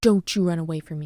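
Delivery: acted, firm, no-nonsense, stern tone. Retelling how she grabbed her in a crowded park, a mock-stern warning. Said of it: "I'm being stern".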